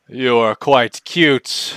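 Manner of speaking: slow, deliberate, unhurried, drawn-out delivery. Voicing Strahd greeting a puppy from behind: Strahd voice. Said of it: "he starts to rub your belly".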